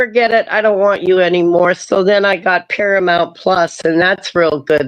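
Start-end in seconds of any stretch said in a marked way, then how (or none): none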